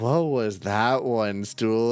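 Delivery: put-on stoned voice. Picturing a character asking about mushrooms: stoned Liar voice. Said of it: "picturing fucking Liar stoned out of their minds".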